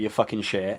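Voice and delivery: heavy put-on Liverpool accent. Retelling what Gary told him when telling him to get offline, imitating Gary's heavy Liverpool accent. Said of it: "in a heavy Liverpool accent".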